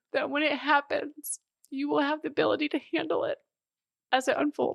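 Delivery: welling up, voice very high with emotion. Speaker repeats a line they needed to hear, getting emotional. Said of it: "I'm getting emotional".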